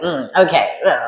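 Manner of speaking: annoyed, fed-up, irritated, put-upon tone. Acting out a person irritated by someone's antics: imitating an irritated person. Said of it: "This person is so irritated by".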